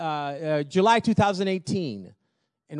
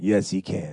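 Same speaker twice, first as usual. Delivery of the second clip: very low, thick, raspy voice; 10 semitones lower than usual. Retelling a man who came up to him, in a thick, raspy voice. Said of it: "with a thick, raspy voice".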